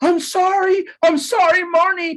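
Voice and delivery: frantic, panicked, very high and drawn-out. Retelling apologizing to the casting director after an audition: imitating own panicked apology. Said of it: "I was freaking out".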